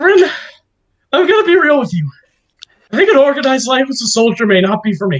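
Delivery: breathless, panting, gasping, out of breath. Voicing a character talking to Bryn while running: panting while speaking. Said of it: "panting, going like".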